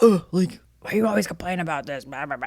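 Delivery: play-acted, fed-up, irritated, groaning annoyance. Retelling the husband's reply about the light: imitating an annoyed husband. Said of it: "he's annoyed that I'm saying something".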